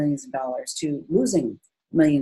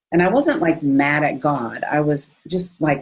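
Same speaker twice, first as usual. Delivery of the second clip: ordinary delivery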